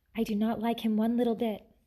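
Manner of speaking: plain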